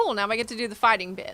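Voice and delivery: ordinary talk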